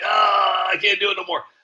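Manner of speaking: put-on elderly man voice. Giving advice not to wait, imitating a seventy-five-year-old man. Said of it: "that seventy-five-year-old man that's like".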